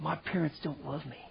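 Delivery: mock crying, tearful, speaking through tears. Retelling what an upset teenager said, imitating someone crying. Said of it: "He's crying".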